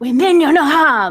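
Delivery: angry menacing voice. A game player speaks in character to a creature about to leap at them, pissed, threatening tone. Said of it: "in a very pissed and threatening tone".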